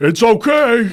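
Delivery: very high, loud yell carrying across a distance. After waddling across a bridge, a character turns back to a companion: yelling back across. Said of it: "he turns back to Kira and yells".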